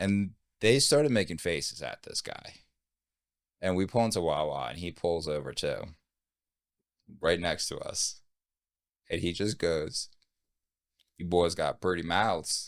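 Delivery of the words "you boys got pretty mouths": put-on southern American truck-driver accent. Retelling what a guy who pulled over next to them said: imitating a southern accent. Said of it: "That southern accent".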